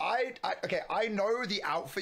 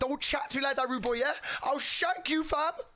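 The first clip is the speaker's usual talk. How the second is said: high, put-on London roadman street voice; 7 semitones higher than usual. Retelling what they said when the listener arrived, in a roadman voice. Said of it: "So I did the Roadman voice".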